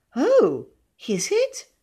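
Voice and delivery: very high, thrilled, delighted sing-song, swooping pitch. Narrator reading a woman's reply to a man about his house, delighted. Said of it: "she said delighted".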